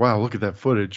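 ordinary talk

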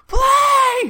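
very high, loud scream. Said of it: "Dunn in the background screaming".

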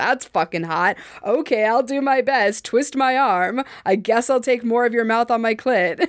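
usual speaking voice

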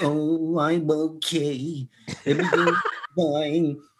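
glum, very slow, drawn-out, droopy, dejected mumble. Retelling a shopper's reply to a friend: imitating a droopy, dejected voice. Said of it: "she had that droopy dog syndrome".

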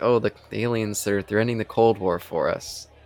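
ordinary talk

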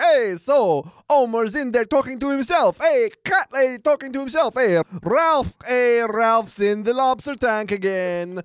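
put-on Italian cook voice. Retelling a scene, imitating an Italian cook walking past. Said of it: "the Italian cook walking past being like".

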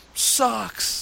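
high, loud, jeering stadium crowd yell.

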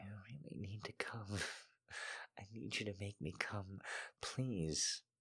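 soft, hushed, quiet pleading tone. First-person narrator pleads with the man teasing her: quiet begging. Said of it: "I begged quietly".

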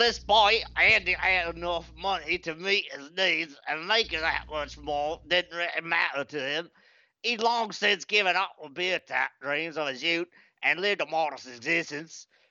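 storybook-style read-aloud delivery in put-on Cockney accent. Reading a passage aloud in a suggested accent: Cockney accent.

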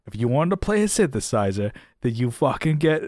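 put-on harsh, forceful, laying-into-it New Jersey accent. Imitating a podcast commentator letting people have it: imitating Matt Quine's accent. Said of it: "I feel bad doing his, his accent".

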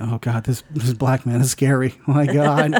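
mock frightened nine-year-old child voice. Imitating a nine-year-old watching the movie: imitating a scared nine-year-old. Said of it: "Nine-year-old thinking".

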